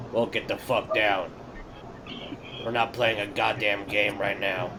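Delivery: grave, dead serious, low voice. Playing a character telling another to get down from up high, very serious tone. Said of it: "I'm gonna look at him in a very serious tone".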